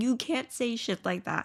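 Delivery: ordinary talk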